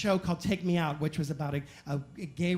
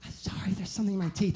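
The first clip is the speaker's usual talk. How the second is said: hushed, quiet, sorry-sounding, apologetic whisper. Retelling what a woman said back after being told to stop: imitating her whisper. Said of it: "she whispers".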